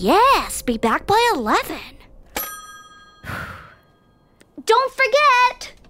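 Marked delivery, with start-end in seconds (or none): 4.6-5.7 high, rising, called-out half-yell. Calling after someone heading back to work, yelling. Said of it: "would you quit yelling?".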